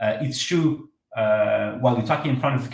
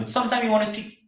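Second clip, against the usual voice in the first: high-pitched, quick, rattled-off delivery. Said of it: "fast, faster".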